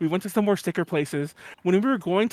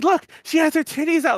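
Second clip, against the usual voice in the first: put-on drunken shout, higher pitch; 9 semitones higher, 3 dB louder than usual. Retelling a drunken moment, shouting at a robot: imitating own drunken shouting. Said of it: "just shouting to the fucking robot".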